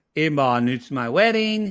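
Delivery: normal talking voice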